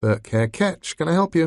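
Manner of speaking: bored, listless receptionist voice, slightly high. A voice answers the phone at Burke Ketch, sounding bored. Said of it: "a bored voice said".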